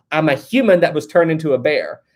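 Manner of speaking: usual speaking voice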